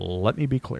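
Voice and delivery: slow, measured, deliberate pacing. Comparing how slowly a wrestler talks to President Obama: Obama impression. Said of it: "like the former President Obama".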